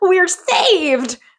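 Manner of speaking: high, bright, cheering exclamation. Retelling an episode scene, imitating Peter and Mickey cheering. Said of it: "Peter and Mickey go like".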